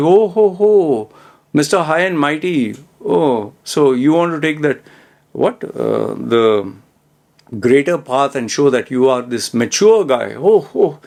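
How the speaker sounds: snide, swooping, sarcastic jeering tone. Retelling a friend's reply to a serious remark: imitating someone's sarcasm. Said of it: "He was pretty sarcastic".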